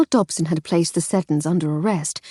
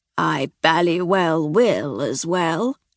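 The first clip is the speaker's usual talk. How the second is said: slow, hoarse, croaky voice. A slowly awakening figure answers from the rustling linen, croaky voice. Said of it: "a croaky voice said".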